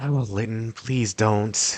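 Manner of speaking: muttered under breath. Voicing what she says to lytton while commentating, muttered under breath. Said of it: "her kind of like say under her breath".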